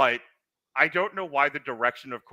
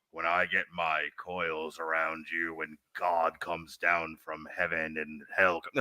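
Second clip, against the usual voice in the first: put-on whispered wrestling promo style, lower and quieter; 7 semitones lower, 6 dB quieter than usual. Imitating a wrestler leaning in on a promo: Jake Roberts whisper. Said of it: "Jake Roberts would kinda lean in and go".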